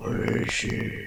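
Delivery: whispered, gravelly, dark and moody growl. Mocking how people do a Batman voice, Batman growl voice. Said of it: "Sounds like a growl".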